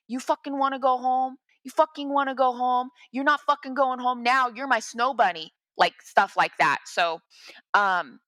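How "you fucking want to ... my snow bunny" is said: put-on, raging, screamed delivery. Retelling how an attacker screamed at the speaker: imitating someone screaming. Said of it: "he's screaming at me".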